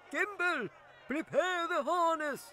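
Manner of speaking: very high, drawn-out, long shout. Someone in the dwarf wagon calls out to Gimble, shouting. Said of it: "there came a shout from the dwarf wagon".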